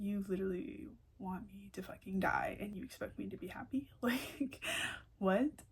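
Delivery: put-on angry, pissed-off tone. Retelling what was said back to him during a fight, retelling an angry reply. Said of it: "that pisses me off".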